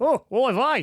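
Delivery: Aussie-accented voice. Picturing how a person would say it, australian accent. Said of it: "imagine a person with an Australian accent say".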